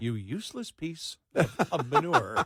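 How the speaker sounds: slow, sweet car-navigation woman's voice. Retelling how the car reads a brother's insulting text: imitating a sweet woman's voice. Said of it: "so it comes in a woman's voice".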